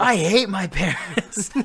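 sudden, shrill, very loud, very slow drawn-out howl. Retelling how a man suddenly screamed out of nowhere, imitating the scream. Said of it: "out of nowhere he just screams".

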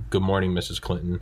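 plain

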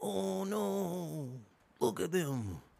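very slow, drawn-out, creaky, high-pitched voice. Mocking a crowd that is not social distancing, speaker does a Fauci impersonation. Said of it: "That's my Fauci impersonation".

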